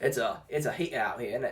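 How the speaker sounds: bad Australian accent slipping into British. Asked to show off the accent, giving a bad australian accent drifting british. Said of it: "British. That was bad".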